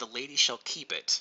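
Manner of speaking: plain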